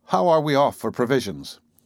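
ordinary delivery

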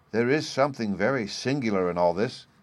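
ordinary delivery

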